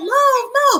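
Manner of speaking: high, sharp drill sergeant yell. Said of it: "the lady, she yelling at me".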